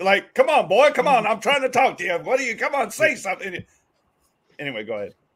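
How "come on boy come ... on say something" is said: put-on loud, high, rooster-style holler with Southern accent. Teasing someone for badgering another person, the speaker does a Foghorn Leghorn impression. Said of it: "Why are you Foghorn Leghorn him?".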